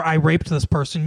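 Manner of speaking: ordinary talk, nothing marked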